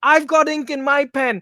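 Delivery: loud high yelling.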